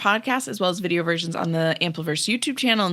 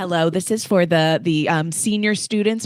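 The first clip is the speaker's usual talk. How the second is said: put-on PA announcer style. Doing a school PA announcement for the senior students: imitating a PA announcement. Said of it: "you never did your P A impression".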